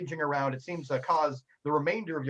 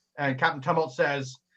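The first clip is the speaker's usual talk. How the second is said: ordinary talk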